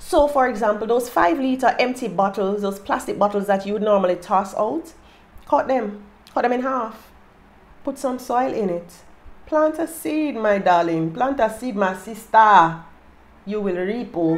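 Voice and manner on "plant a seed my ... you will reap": over-the-top Nigerian accent, laid on thick. Speaker explaining planting seeds in cut bottles, slipping into a whack Nigerian accent. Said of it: "me and my whack nigerian accent".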